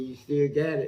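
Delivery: ordinary delivery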